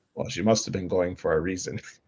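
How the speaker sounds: dry, low, flat deadpan. Retelling a grandfather's reply to a police officer: imitating grandfather's deadpan reply. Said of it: "he said it so deadpan".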